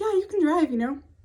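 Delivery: high, loud, sweet sing-songy lilt. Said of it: "just sing-songy".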